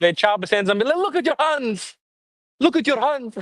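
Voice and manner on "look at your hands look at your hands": put-on Congolese accent. Imitating people in the Congo threatening someone: attempted Congolese accent. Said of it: "I don't even know how to, how to do the accent".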